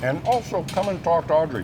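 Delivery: talking with mouth full. Still chewing a Brussels sprout mid-segment, talking while chewing. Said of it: "I'm still chewing this Brussels sprout".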